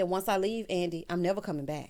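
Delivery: plain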